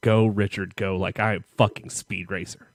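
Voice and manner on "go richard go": ordinary talk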